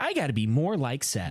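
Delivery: put-on dry, sarcastic tone. Imitating how people say a line, imitating a sarcastic remark. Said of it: "people always say that sarcastically".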